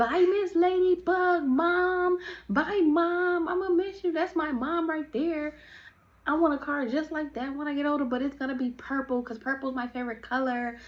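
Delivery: high, over-the-top, overdone chatter. Retelling a friend's goodbye to a mom: imitating someone being over the top. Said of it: "Twinkie trying to do the most".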